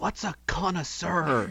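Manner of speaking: quiet, hushed whisper. A character leans over a companion's shoulder to ask something, whispering. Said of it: "leans over his shoulder and whispers".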